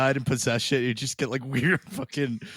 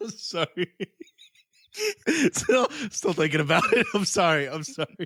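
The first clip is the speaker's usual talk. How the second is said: laughing, words breaking through, high and swooping; 5 semitones higher than usual. Apologizing to the co-host through a fit of giggles: laughing while talking. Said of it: "this will be the second laugh attack I've had".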